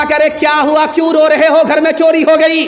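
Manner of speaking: shouting.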